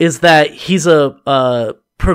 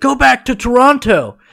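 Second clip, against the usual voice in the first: put-on very high, shrill, heckling yell; 9 semitones higher than usual. Retelling a fan heckling a wrestler: imitating someone yelling. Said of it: "yells at Chris Jericho".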